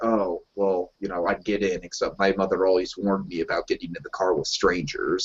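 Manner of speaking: put-on icy, very cold, frosty delivery. Retelling a character's reply to his father: imitating a cold reply. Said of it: "very coldly".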